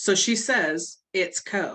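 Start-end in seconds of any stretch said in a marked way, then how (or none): 1.1-1.7 mock smart-aleck tone, put-on. Retelling a movie scene where the sister corrects him: imitating a smart-ass remark. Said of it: "in a smart ass way".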